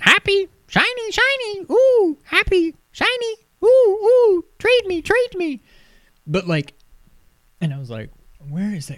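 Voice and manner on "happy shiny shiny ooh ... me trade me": very slow, very high, squawky parrot voice. Retelling what a talking bird said, talking like a parrot. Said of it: "he talks like a parrot".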